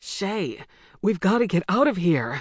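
urgent, breathless, pressing voice. Jason spins around to shay after she stops him, urging breathlessly. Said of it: "he urged breathlessly".

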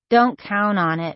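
ordinary delivery

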